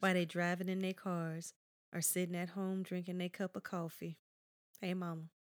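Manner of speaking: low, eerie, unsettling put-on voice. Picturing listeners driving or drinking coffee, creepy voice. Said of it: "What was that creepy voice?".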